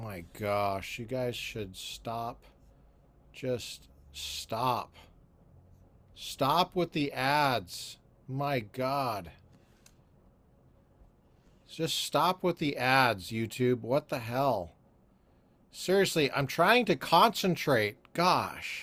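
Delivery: exasperated, fed up. A host, interrupted by ads while trying to concentrate, vents at YouTube, frustrated. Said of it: "I am so frustrated with these ads".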